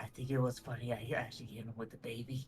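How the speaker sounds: whispered aside. During the game, a player's character whispers to Solo, whispering. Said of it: "whispers to Solo".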